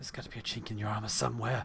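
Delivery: low, hissing monster creature voice. Game master voicing a creature as it stabs at Castix: hissing creature voice. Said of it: "it hisses".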